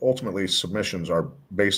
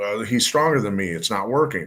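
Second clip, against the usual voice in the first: ordinary talk, nothing marked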